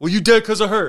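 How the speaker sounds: loud, high-pitched yelling.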